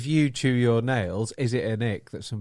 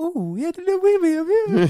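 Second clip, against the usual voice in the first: mocking baby talk, higher pitched and louder; 6 dB louder than usual. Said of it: "do fucking baby voice".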